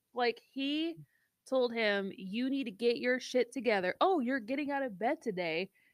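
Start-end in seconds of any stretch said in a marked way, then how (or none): 2.2-5.7 put-on sassy lecturing tone. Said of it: "He was a sassy butler".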